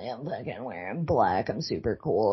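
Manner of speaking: put-on smug, self-satisfied, full of himself tone. Retelling a film scene where a character walks through a record store: imitating a smug character. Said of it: "he goes through the store all smugly".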